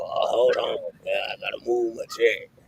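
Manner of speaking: mocking, put-on voice that sounds old. Mocking the other speaker for moving a chair: imitating someone sounding old. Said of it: "you sound so old doing that".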